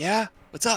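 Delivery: very faint, distant voice. Voicing a character answering from behind a stone slab: very faint voice. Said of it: "You hear a very, very faint".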